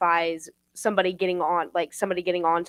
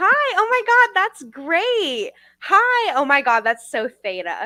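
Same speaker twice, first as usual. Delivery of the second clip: very high, bubbly, swooping fake-friendly gush; 10 semitones higher, 5 dB louder than usual. Imitating the people at the org, who talked just like this: imitating overly cheery greeting. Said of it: "they would talk just like this".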